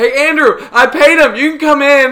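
put-on very loud, very high, drawn-out drunken shout. Retelling how a drunk uncle called back from the bar door: imitating a drunk uncle shouting. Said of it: "literally just, like, shout it".

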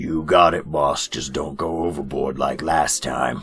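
put-on grizzled old character voice. Voicing a crusty old rabbit barkeep with an eye patch: crusty old rabbit barkeep voice. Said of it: "a crusty old, uh, rabbit behind the bar".

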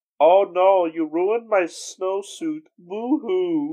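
put-on very heavy German accent, high and slow. Retelling a character's line from a show, in a thick German accent. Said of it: "he has a very thick German accent where he says".

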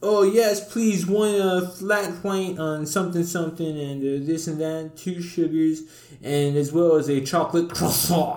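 high, fancy, try-hard voice. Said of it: "this lady was one hundred percent like".

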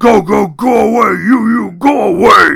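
very slow, raspy, rough, loud, drawn-out yell. Eustace, on the front steps, yells at the arriving men: yelling. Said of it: "Eustace yelled".

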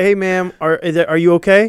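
put-on super calm tone. Retelling checking on an old lady after she hit his car, super calm. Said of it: "super calm".

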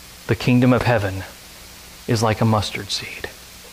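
low, flat, droning monotone with zero expression. Mocking movies about Jesus, the speaker quotes him in a flat monotone. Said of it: "this like straight-faced monotone dude".

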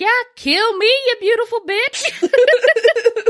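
put-on, very high, drawn-out tipsy man's voice. Retelling what a drunk man at a bar said: imitating a drunk man. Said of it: "he's clearly drunk".

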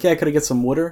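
put-on Jersey-Philly accent, "water" said as "wooter". Retelling what a customer at work asked: imitating a customer's Jersey accent. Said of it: "they're like".

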